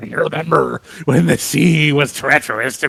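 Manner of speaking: put-on grizzled, gravelly old pirate accent. Joking about how a famous author should sound, grizzled pirate accent. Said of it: "a grizzled pirate accent, like an old sailor accent".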